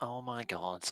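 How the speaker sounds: muttered under breath. Voicing Karina as she rolls her eyes and stalks away, muttered under breath. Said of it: "mutters, "Oh my gods," under her breath".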